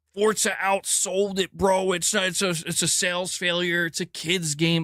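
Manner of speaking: put-on heated, mock-screaming rant. Speaker mocks people arguing about game sales, imitating them screaming. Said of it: "screaming at the top of their lungs".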